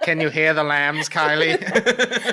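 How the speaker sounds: drawn-out creepy tone. Teasing another speaker after joking about the son: Hannibal Lecter voice. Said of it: "Now you're kinda creeping me out".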